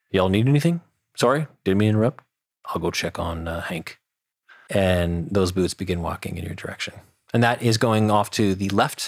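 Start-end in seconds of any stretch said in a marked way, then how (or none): 0.1-4.0 gentle, easygoing, mild-mannered guard voice. Narrating a scene, voicing a guard heard down a chamber, in a soft voice. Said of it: "you hear a soft voice say".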